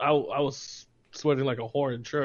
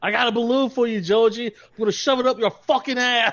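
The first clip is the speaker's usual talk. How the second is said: put-on Boston accent, pitched up, held throughout; 9 semitones higher, 4 dB louder than usual. Showing what comes to mind when thinking of a Boston accent. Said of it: "whenever I think of like Boston accent".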